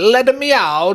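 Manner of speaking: put-on Italian accent. Repeating a phrase from the conversation, in an Italian accent. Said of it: "I want to say it in an Italian accent".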